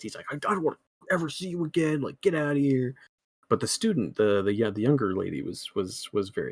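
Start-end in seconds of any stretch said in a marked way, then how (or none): 0.3-3.0 put-on angry, pissed-off voice, higher. Retelling a movie character telling someone to get out: imitating someone pissed off.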